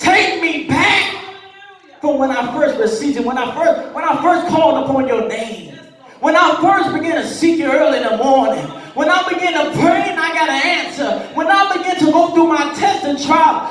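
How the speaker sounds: impassioned, fervent pleading delivery.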